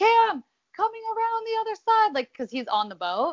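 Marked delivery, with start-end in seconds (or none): 0.0-2.1 mock loud, very high calling yell. Retelling calling to the husband driving the boat, retelling yelling to husband. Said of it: "I'm like yelling to my husband".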